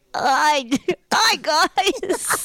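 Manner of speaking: put-on high, childlike little-kid voice like a ten-year-old. Doing an impression of the absent weather correspondent Tim: imitating Tim as a kid. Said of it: "that's Tim when he was, like, ten years old".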